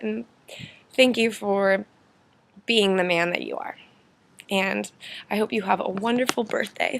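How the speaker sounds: welling up with tears. Speaker records a birthday message to their father, welling up with tears. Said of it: "I'm welling up with tears".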